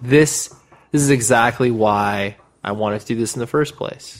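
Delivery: ordinary talk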